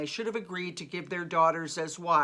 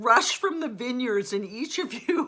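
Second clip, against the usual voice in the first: reading breaking into laughter, raised and high; 7 semitones higher, 5 dB louder than usual. Reading a scripture passage aloud to a group, laughing while reading. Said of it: "I'm sorry, I'm laughing".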